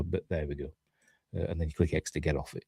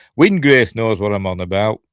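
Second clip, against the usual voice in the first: plain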